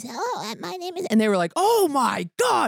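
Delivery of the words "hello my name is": put-on elderly woman voice, pitched up. Recalling doing voices for people in a car: old lady voice. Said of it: "here's the old lady voice".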